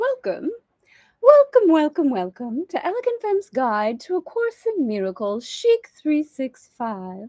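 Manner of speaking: swooping, half-baked, half-British nanny accent. Welcoming listeners to her guide after a reset, in a half Mary Poppins accent. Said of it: "I don't know what accent that was. It was a little Mary Poppins mixed with something".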